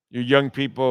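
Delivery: ordinary delivery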